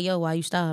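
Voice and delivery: ordinary talk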